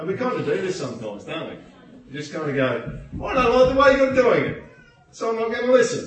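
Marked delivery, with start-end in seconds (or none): 3.2-6.1 put-on loud, high, shrill five-year-old voice. Acting out how people refuse to listen: imitating a five-year-old kid. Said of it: "Like a five-year-old kid sometimes".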